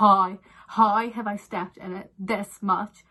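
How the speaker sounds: loud, exasperated, shocked disbelief. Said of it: "I was like".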